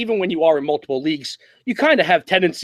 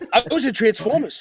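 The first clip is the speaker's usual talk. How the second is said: put-on Boston-accented actor voice, higher; 6 semitones higher than usual. Doing a Mark Wahlberg impression when asked to: Mark Wahlberg impression. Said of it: "can you do an impression of Mark Wahlberg?".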